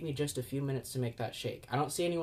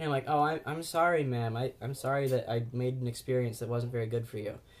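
ordinary talk, nothing marked

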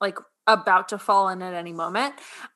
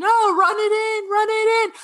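play-acted sports-fan yelling, very high pitch; 13 semitones higher, 3 dB louder than usual. Retelling how they yell at the TV like at the Super Bowl: imitating own yelling at the TV. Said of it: "I'm just yelling at the T V".

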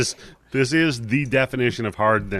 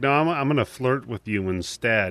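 ordinary talk

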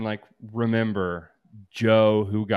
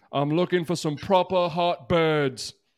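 mock British accent, higher pitch; 8 semitones higher than usual. Joking about the UK Love Island version: put-on British accent. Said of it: "the accents will do something for me".

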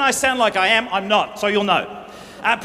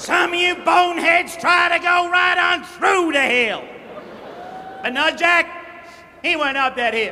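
high-pitched American preacher sermon delivery; 7 semitones higher than usual. Showing how the Jack and Jill story would sound preached in America, American preacher parody. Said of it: "Say you were preaching in America on the subject, the subject of [name] and [name]. And it'd sound like this".

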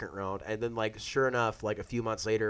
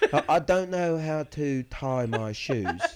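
fake British accent, higher and louder; 5 semitones higher, 6 dB louder than usual. Joking that anything sounds smart: put-on English accent. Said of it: "the English accent".

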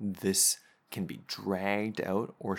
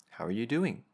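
rising pitch at the end on "doing"; 3 semitones higher than usual. Explaining how pitch marks questions: rising tone on 'doing'. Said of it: "It goes up at the end".

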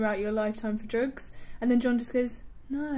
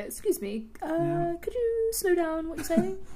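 very proper put-on upper-class posh accent, pitched up; 6 semitones higher than usual. Joking about being a drug dealer who can't understand buyers, posh drug dealer voice. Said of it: "The poshest drug dealer".

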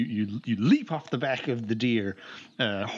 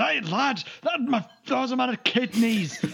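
comic deer voice, pitched very high; 13 semitones higher, 4 dB louder than usual. Narrating a ride as game master, voicing the deer Cribbalore. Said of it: "And he goes".

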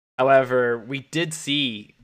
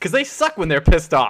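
very loud, high-pitched yelling. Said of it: "Wesley Snipes is yelling at Woody".

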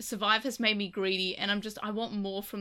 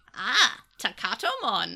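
put-on wise alien creature voice; 4 dB louder than usual. Pitching a dub line for a monster in the show, in a Yoda voice. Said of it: "I don't know why my voice went Yoda".

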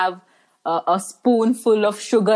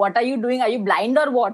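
put-on angry scolding woman voice, higher; 3 semitones higher than usual. Retelling how a triggered woman scolded the speaker: imitating an angry scolding woman. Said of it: "the accent or the voice tone in which she said".

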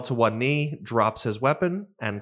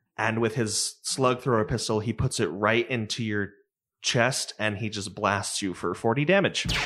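normal talking voice

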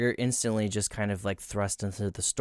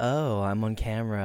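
put-on vain tone. Retelling how a man on camera acted: imitating a vain man.

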